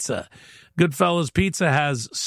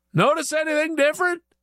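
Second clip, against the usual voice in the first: slightly raised, a little louder, very high voice; 10 semitones higher than usual. Telling a joke, the speaker voices a man asking a woman again: asking a little louder. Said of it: "he asks a little louder this time".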